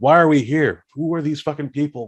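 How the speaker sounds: put-on, high-pitched, raging, angry screaming. Telling a story about a man who starts yelling at someone; retelling someone screaming. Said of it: "he starts screaming at Dolph Lundgren".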